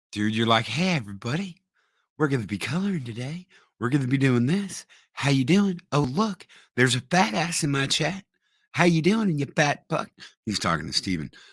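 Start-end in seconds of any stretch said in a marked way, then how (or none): 0.6-10.1 high, chatty TV painting-host voice. Teasing the other person by acting them out: imitating the other person as Bob Ross. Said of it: "it's like watching, the Bob Ross. Dude, you're like".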